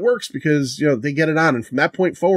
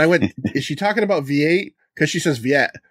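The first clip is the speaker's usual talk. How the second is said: ordinary talk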